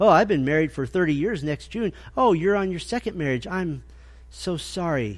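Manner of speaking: condescending, patronising tone with fake, pitying sympathy. Speaker acts out church members talking down to a divorced person: mock-condescending.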